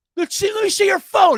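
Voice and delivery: shrill, very high, loud, acted-out drunken yell. Retelling a drunk heckler demanding to see a phone: imitating a drunk heckler yelling. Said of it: "He yells at us".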